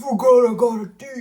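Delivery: very loud, high, brazen, swaggering badass voice. Repeating a quoted line from a story: imitating a super deep voice. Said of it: "the voice automatically got super deep".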